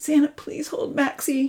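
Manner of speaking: high, begging, pleading voice. Charlie, hurt from a fall, asks someone to hold the dog, begging. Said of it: "Charlie begged".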